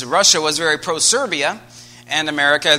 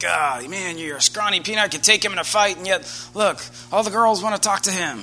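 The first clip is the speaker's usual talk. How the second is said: mock-disdainful, acted scornful sneer; 4 semitones higher than usual. Retelling how popular boys looked at him as a kid, in mock disdain. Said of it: "look at me with disdain".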